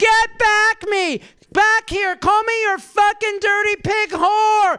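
slow, high, loud, drawn-out hollered yell. Recounting what he yelled out while the speaker searched the laundry, retelling a yell. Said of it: "he yells out".

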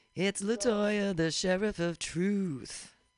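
grand, slow, loud announcer intro.

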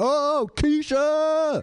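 mock shrill, very high, loud yell. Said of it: "I'm yelling the girl name".

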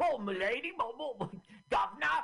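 put-on strong Cockney accent. Describing how an ugly puppet sounds, in a strong Cockney accent. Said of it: "it's so Cockney".

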